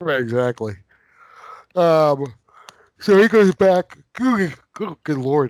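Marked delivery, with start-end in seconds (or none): 4.1-5.5 words swallowed by a yawn while speaking. Retelling a film plot to another speaker, yawning while talking. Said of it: "Sorry to be yawning at you".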